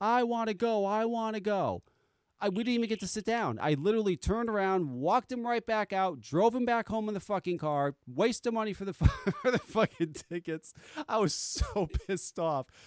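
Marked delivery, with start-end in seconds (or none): 0.0-1.8 mock child screaming, higher and slower. Retelling a child's breakdown before they reached their seats, imitating a child screaming.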